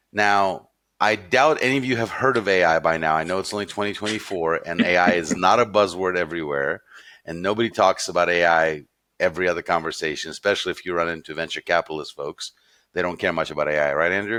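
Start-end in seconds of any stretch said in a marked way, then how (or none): none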